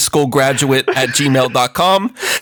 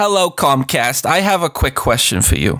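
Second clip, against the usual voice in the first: put-on elderly woman character voice. Playing an old lady calling tech support: old lady voice. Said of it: "you will be playing the old lady".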